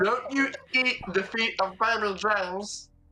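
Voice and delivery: high, slow, mock scolding voice.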